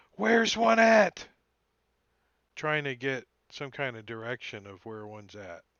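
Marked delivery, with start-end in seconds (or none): 0.2-1.3 slow, high, loud yell. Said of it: "Quint's gonna yell out".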